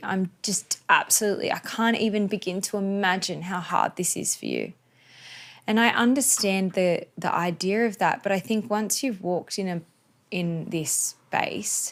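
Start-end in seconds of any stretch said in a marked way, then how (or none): 0.0-4.7 acted tearful pity, swooping pitch. Retelling how people offer condolences with weepy eyes: imitating a weepy sympathizer. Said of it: "looks at you with weepy eyes and is like".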